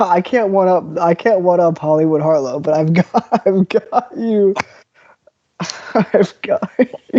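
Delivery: slow, laughing through the words. Setting up a surprise joke for the other speaker, laughing while talking. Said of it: "I'm making myself laugh".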